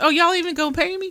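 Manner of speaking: very high-pitched, loud, teasing, joking tone. Recounting what he said on hearing it was voluntary: acting out a joking remark. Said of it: "Like jokingly".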